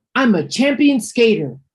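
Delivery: loud, excited exclamation. Narrator reads Clara answering two boys, exclaiming. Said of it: "Clara exclaimed".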